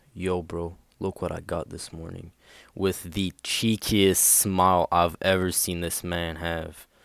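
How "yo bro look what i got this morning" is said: put-on whisper. Retelling a friend at the locker showing something: imitating a whisper. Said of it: "whispers in my ear".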